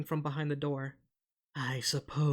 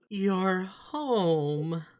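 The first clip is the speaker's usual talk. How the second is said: put-on slow-witted, simple-minded man's voice; 4 semitones higher, 3 dB louder than usual. Retelling what the man downstairs says, in a slow-witted man's voice. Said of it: "you hear the voice of the mentally slow man".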